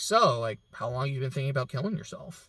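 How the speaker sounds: fast, breezy, offhand, super nonchalant, with no weight. Retelling a mother's question to her son over breakfast: imitating a nonchalant question. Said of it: "super nonchalantly asks him".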